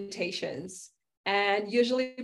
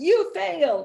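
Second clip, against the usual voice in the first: sneering, mocking put-on taunting voice, raised; 7 semitones higher, 6 dB louder than usual. The speaker voices an unused planner page taunting them, voicing a mocking planner page. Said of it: "sit there mockingly looking at me".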